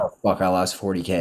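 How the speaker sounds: ordinary talk, nothing marked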